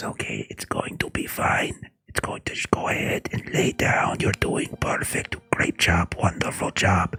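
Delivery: hushed, soft, quiet whisper throughout. Voicing a character coaxing a pony to lie down: whispering. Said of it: "he kinda whispers".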